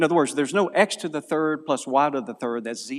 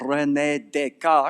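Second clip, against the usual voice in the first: put-on French accent over Southern accent. Explaining a mathematician's history to listeners, saying a name in a fake french accent. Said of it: "Nothing worse than a French accent with a Southern accent".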